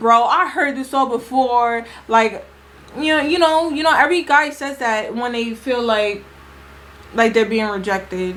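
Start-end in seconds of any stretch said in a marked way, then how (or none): none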